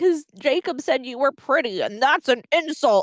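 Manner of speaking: acted-out angry, resentful, pissed-off, jealous griping. Retelling how Edward reacts to Jacob calling Bella pretty: imitating a pissed-off Edward. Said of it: "he's all pissed".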